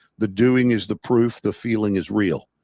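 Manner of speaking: ordinary talk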